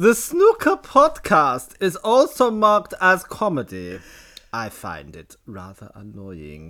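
put-on German accent. Reading out podcast descriptions for a joke: put-on German accent. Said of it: "It's hard to do a German accent in English".

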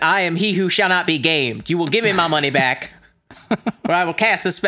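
put-on sorcerer voice, Southern accent. Playing he who shall not be gamed in a comedy bit, Southern-accented Voldemort voice. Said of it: "I don't know why he's Southern".

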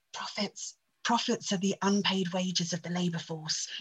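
soft, hushed half-whisper under the breath. Quoting the hooded Kermit meme: half-whispering as hooded Kermit the Frog. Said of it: "and he whispers".

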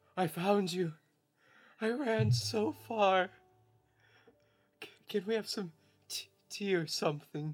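exhausted, worn-out, slow, stumbling, stammering voice. Voicing Edward as he crawls around the corner: Edward crawling in, worn out. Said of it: "Edward just crawls around the corner. And he's like".

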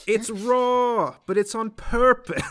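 terrible fake English accent. Playing a chef in a skit about poison food: terrible English accent. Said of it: "Terrible English accent, guys".

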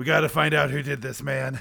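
put-on grizzled, creaky, raspy old voice, weary like a detective. Imagining a detective looking over a corpse: grizzled old Pikachu voice. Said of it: "a grizzled old Pikachu".

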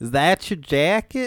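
bad Chicago accent. Asked for their best Chicago accent, the speaker tries one: Chicago accent. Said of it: "Let me hear your best Chicago accent".

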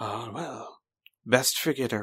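relaxed, calm and offhand. Narrating a violent scene, the speaker voices a man's reply, casual and calm. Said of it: "casually, calmly".

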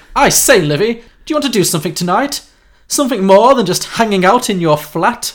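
put-on upper-class Eton accent. Narrating a made-up park scene, one character asks another out, in a posh Eton accent. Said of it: "in a posh Eton accent".

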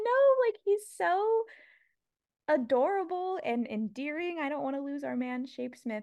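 effusive, gushing delivery.

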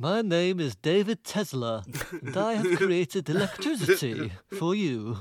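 put-on, indeterminate, vague European accent. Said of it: "Indeterminate European accent".

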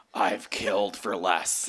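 play-acted slow growl, each word drawn out. Narrator reads his own line on waking up offended, growling.

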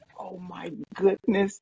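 smitten, high, instant gut-reaction exclamation. Imitating Emily seeing a cat: imitating Emily's reaction to a cat. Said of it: "those are her three words".

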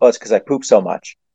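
mock, dead serious, totally straight deadpan delivery. Retelling an answer about a nickname's origin: imitating a deadpan reply. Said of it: "dead ass in the face says".

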